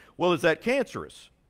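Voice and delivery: ordinary talk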